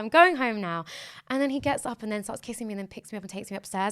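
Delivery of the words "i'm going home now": loud, playful, cutesy joking tone. Retelling own past words while leaving a date: imitating own joking, cutesy tone. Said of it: "jokingly and cutesy".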